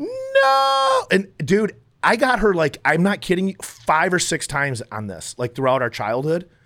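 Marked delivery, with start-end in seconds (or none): 0.0-1.1 very high, rasping, stretched-out, rough scream. Retelling childhood pranks, the speaker acts out the sister's reaction: imitating the sister screaming. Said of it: "she'd start screaming".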